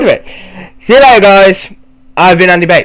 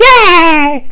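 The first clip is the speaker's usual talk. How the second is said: mock cheering, higher; 12 semitones higher than usual. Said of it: "I love how she walks like".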